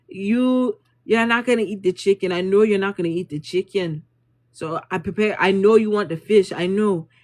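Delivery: clowning, mocking, know-it-all teasing. Retelling how a chef teased them in front of everybody: imitating a chef clowning them. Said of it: "clowning us".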